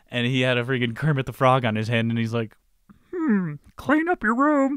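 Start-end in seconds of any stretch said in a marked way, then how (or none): 3.1-4.7 pitch raised way up, drawn out. Imitating a professor with a puppet on his hand: Kermit the Frog voice. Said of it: "Is that how Kermit sounds?".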